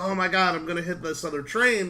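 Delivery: ordinary delivery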